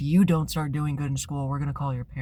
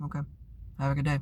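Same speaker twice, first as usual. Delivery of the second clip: fake flat, blank, indifferent tone; 3 semitones higher than usual. Retelling how you answered a furious tirade by going blank, you sign off with the other person, in a flat, blank, indifferent manner. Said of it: "he'd get louder and scream more".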